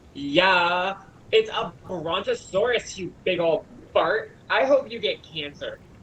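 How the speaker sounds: put-on small little girl's voice with yeah stretched long. Narrating a scene, the speaker voices the little girl answering; little girl voice. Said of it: "And the little girl goes like".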